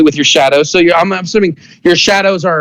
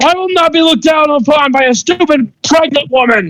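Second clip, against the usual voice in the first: shouting in a very high register; 10 semitones higher than usual. As the enemy blocking the way to your brother, answer back: yelling. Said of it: "And you see like his hand starts to glow like that, and he jumps up in the air, and he goes to shoot at both of you. / So [name] goes, / So he's blocking the way to your brother. / why are you yelling".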